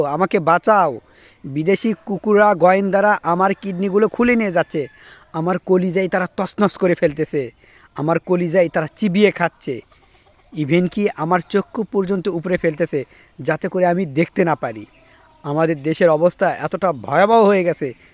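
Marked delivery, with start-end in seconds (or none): none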